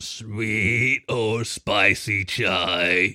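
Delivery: gurgling golem creature voice, "chai" drawn out. Reading a story, the narrator voices the bread golem at the counter: gurgling voice. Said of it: "the bread golem gurgled".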